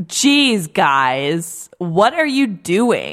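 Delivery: mock wooden, unconvincing actress voice. Retelling a scene, imitating an unconvincing actress playing a kidnapped prisoner. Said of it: "She's basically that the whole time".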